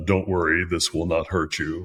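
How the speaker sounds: put-on big, evil voice. Recalling his scripted line from a scene with Scott Glenn, put-on big evil voice. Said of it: "I used my, you know, big voice to sound evil".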